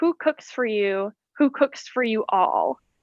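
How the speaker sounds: ordinary talk, nothing marked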